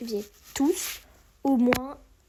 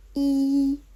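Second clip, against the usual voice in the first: I held high and level, first tone; 2 semitones higher, 5 dB louder than usual. Pronunciation lesson on numbers, number one: first tone on I. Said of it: "c'est le premier accent".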